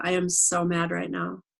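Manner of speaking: matter-of-fact, flat, even, with no heat. Retelling what she told her husband in the kitchen, her own flat delivery. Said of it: "he didn't believe me because I was just like".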